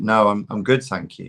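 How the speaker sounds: imitated voice, attitude-laden delivery. Retelling turning down a stranger's offer: imitating own reply with attitude. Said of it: "I said it like that".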